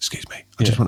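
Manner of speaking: put-on whisper spoken close to the mic. Imitating Steven Bartlett's clips asking people to subscribe: imitating Steven Bartlett whispering. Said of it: "he whispering to, whispering down the mic".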